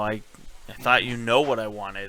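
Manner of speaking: usual speaking voice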